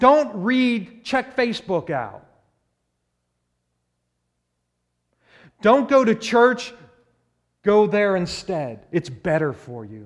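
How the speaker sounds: mock light, high half-yell. Speaking of the sinful nature tempting a believer, the speaker acts out a yell. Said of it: "Screaming and yelling".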